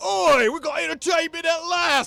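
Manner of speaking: very loud, very high yelled shout. Voicing a crowd member heckling a performer on stage: shouting crowd member. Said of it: "Someone in the crowd shouts".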